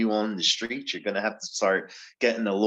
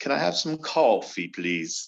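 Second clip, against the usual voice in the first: horrible, fake, put-on Indian accent; 4 semitones higher than usual. Asked to try an accent, a self-described non-actor tries it: bad put-on accent attempt. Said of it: "that's a fantastic Indian accent".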